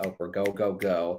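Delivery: ordinary talk, nothing marked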